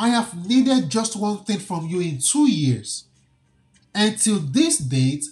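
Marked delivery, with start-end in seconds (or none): none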